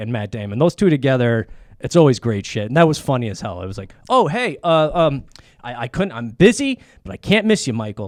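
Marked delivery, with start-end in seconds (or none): 4.1-8.1 slow, halting, deliberately bad acting. Retelling a movie scene where the character arrives late, imitating deliberately bad acting. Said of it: "it was Ben Affleck doing bad acting".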